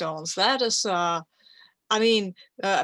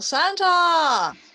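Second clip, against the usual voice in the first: loud, high-pitched yell.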